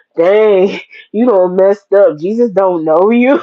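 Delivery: taunting devilish laughter. Acting out the devil laughing at people who were turned away. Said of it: "he laughing like".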